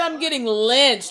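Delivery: ordinary talk, nothing marked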